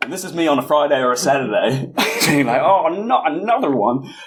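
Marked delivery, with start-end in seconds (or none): 2.6-4.1 put-on high-pitched little old lady voice. Speaker acts out herself on a friday or saturday, old lady impression. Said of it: "that was my best, I don't know, old lady impression".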